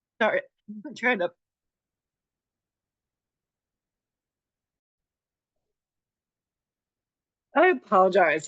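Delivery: breathless, labored voice struggling for air. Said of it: "I have asthma".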